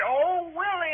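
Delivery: acted high, hollered calling out. Retelling how a younger family member shouted after him: imitating someone hollering. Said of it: "She hollered".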